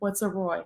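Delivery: put-on sarcastic tone. Retelling what mom said on first hearing of a dog: imitating mom's sarcastic tone.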